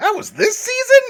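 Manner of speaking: very high, very loud, incredulous disbelieving outburst. Doing the requested bit about past contestants: put-on disbelieving voice. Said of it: "so you can do that voice".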